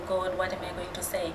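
soft, worried whispering.

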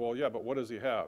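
ordinary talk

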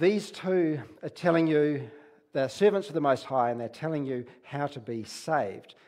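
normal talking voice

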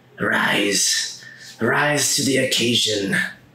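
cackle-laced creature-like woman's voice. Narrator voicing the creature, a woman, as the players hear it speak, cackling voice. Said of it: "this woman in like a cackling voice say".

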